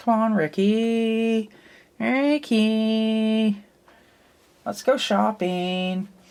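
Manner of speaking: put-on very high, stretched-out valley girl voice. The speaker shows the voice she uses for Baby, Baby's Valley girl voice. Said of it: "She kind of sounds like a Valley girl, a little bit like this".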